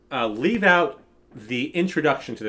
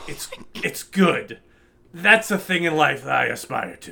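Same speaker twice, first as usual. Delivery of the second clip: bad put-on gruff movie-star voice. Reading a quote aloud in a bad Al Pacino impression. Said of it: "my bad Al Pacino impression".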